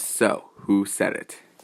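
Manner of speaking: slow, stern, severe, demanding tone. Retelling what a man said to a class the next day, imitating a stern voice. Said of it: "In a stern voice".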